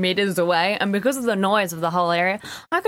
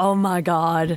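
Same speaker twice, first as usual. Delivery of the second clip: put-on American accent, lower pitch; 4 semitones lower than usual. Quoting a reaction during an interview, in an american accent. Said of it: "every time you quote someone, you do an American accent".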